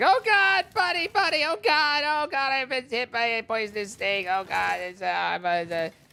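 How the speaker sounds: frantic, flustered, panicked, stumbling babbling. Telling a joke, acting out a man just bitten by a snake: mock panic. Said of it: "he calls to his buddy, he's like".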